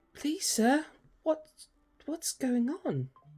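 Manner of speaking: small-sounding voice. Narrating to players, voicing someone heard through a closing door, in a small voice. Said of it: "You hear a small sounding voice coming through".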